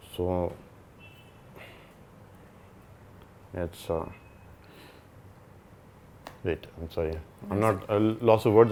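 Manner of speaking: holding back tears, choked-up, faltering, halting words. Talking about a daughter's heart condition, holding back tears. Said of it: "control my tears".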